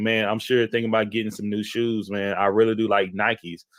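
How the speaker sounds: plain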